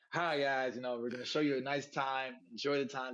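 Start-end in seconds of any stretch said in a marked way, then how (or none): none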